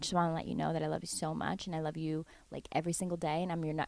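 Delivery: rapid-fire gushing, a mile a minute, very fast. Retelling a dad's loving FaceTime call, imitating dad talking very fast. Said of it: "he was talking a mile a minute".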